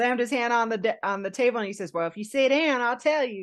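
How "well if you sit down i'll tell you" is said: put-on country boy accent, higher pitch. Retelling what a man said after slamming his hand on the table: country boy accent. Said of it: "I say that with an accent".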